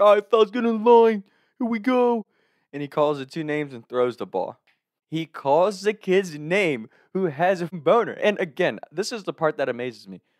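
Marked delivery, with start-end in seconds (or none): 0.0-2.2 put-on New Jersey accent, pitched up. Retelling how a coach called the fellas into line, New Jersey accent. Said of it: "our coach had this New Jersey accent".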